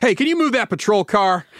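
acted annoyed officious tone. Retelling a manager ordering a cop: imitating an annoyed, officious tone. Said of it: "in his most annoyed, officious, managerial tone possible".

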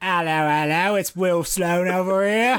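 London Cockney accent. Introducing himself as Will Sloan after the host's intro, in a Cockney accent. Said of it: "why I'm talking in this Cockney accent".

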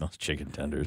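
strange, odd, off-kilter reading. Imitating how another speaker just said a line: a weird-sounding delivery. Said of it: "You're like".

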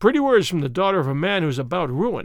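ordinary delivery

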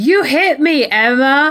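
acted, incredulous, high, very slow and drawn-out. Recapping a wrestling show, quoting a wrestler accusing Emma, imitating Paige's disbelieving voice. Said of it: "Paige says in this disbelieving voice".

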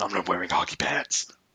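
hushed, soft, dark superhero voice, heroic tone. Trotting out a favourite movie line as a Batman impression. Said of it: "a Batman impression".

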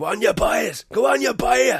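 put-on very high, drawn-out screaming. Describing a favourite Liam Neeson clip, the speaker imitates Liam Neeson screaming. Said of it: "he's screaming into the camera".

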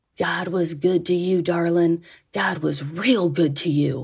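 mock-impassioned, put-on passionate voice. Retelling what a man said at the end of a chat, imitating passionate speech. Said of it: "he said it with such passion".

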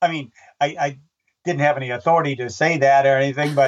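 ordinary delivery

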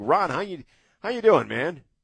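high, loud upbeat voice.

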